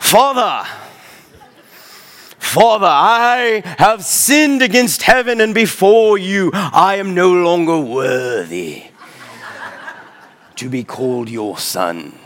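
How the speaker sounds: very posh plummy British, slow, "I" drawn out. Imagining the son's rehearsed speech to his father, very posh british accent. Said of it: "he likely does it in like a very posh British accent".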